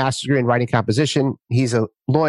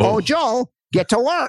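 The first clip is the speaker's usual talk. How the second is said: put-on slow, high, drawn-out Minnesota accent; 11 semitones higher than usual. The speaker recalls his mother's voice in his head: Minnesota mom accent. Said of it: "I had my mother's Minnesota voice in my head".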